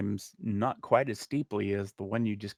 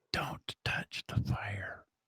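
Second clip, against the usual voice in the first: hushed, quiet, breathy whisper, barely voiced; 6 dB quieter than usual. A game master voices a woman whispering to a player's character. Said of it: "But then she whispers to you".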